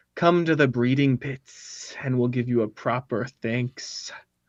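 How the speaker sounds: soft, hissing creature voice. Narrator voicing a ghoul inviting the players to the breeding pits, hissing ghoul voice. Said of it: "as it hisses".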